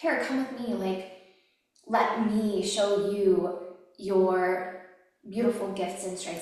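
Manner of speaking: tearful, crying, voice cracking. Speaker describing what they want to give to other women, crying. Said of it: "I'm literally crying".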